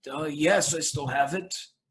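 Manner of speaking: put-on shocked, high, stammering old man's voice. Game narrator voicing a shocked granddad asked about a ring: stammering granddad.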